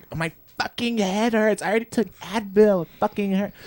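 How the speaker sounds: very high, furious, angry griping. Retelling how someone acted at work with a headache: imitating Hayden being angry. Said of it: "so angry".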